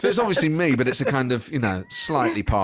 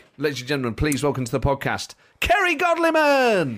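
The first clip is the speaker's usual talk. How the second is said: dramatic announcer intro, higher pitch; 4 semitones higher than usual. Bringing the guest onto the podcast the way a gig would: dramatic gig compère introduction. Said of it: "bringing you on as, as you would at a gig".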